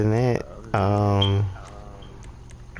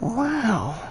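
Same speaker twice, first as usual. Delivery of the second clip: high, put-on, laid-back, marveling voice. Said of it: "in my Owen Wilson voice".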